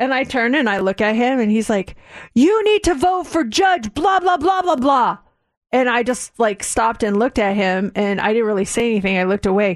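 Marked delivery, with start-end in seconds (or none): 2.3-5.2 mock insistent, high-pitched, hectoring yelling. Retelling a guy who screamed at the speaker and daughter, imitating his screaming. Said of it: "this guy starts screaming at us".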